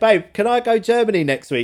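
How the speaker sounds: mock very high, loud shout. Speaker retells calling from the lounge downstairs to his partner, retelling shouting upstairs. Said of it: "I'm like shouting upstairs".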